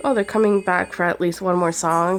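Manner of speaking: normal talking voice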